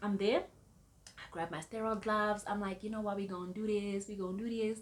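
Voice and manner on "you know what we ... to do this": happy, cheerful, pumped-up energy. Retelling grabbing sterile gloves to deliver a baby: imitating own happy self. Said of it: "I'm happy".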